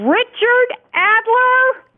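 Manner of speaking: very high, swooping, commanding bossy voice. Calling out a name on request: authoritarian motherly voice. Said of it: "in your best authoritarian motherly voice".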